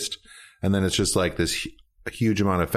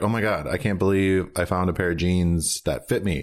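usual speaking voice

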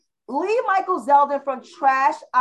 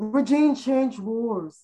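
slow, mocking imitation of a voice. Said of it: "that's how she sound".

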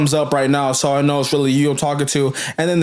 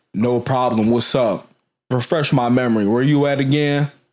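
put-on man's voice, slightly deeper; 3 semitones lower than usual. Reenacting a man's side of a chat with a boy, putting on a deeper man's voice. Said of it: "I'm gonna do his voice a little deeper".

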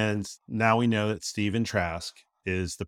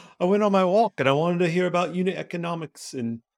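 failed put-on Australian accent, pitched up; 9 semitones higher than usual. Imitating a podcast guest's voice, joking about a walk: Mike Fuller Australian voice. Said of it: "now I'm doing my Australia voice".

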